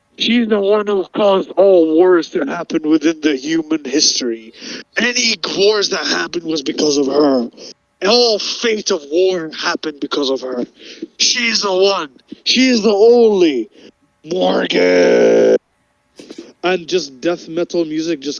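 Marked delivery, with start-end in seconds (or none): 0.2-15.6 arena ring announcer voice, building up. Retelling how he introduced a fighter in the arena: imitating an arena fight announcer. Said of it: "now we come into the, uh, arena, and he's like".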